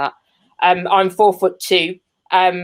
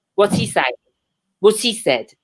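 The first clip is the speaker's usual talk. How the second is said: plain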